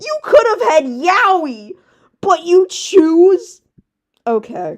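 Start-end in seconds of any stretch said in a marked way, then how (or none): 0.0-3.6 loud, high shriek, stretching out yaoi. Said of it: "I'm screaming about Yaoi".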